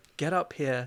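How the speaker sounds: put-on worried, anxious-sounding voice. Imitating the other speaker's phone call: imitating a worried voice. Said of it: "it did sound worried".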